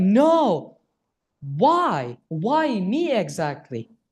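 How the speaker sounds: put-on very slow, tearful, hopeless, swooping crying. Retelling own past words after a problem: retelling own crying. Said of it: "I was literally crying, saying like".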